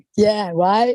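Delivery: normal talking voice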